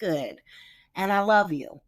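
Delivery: plain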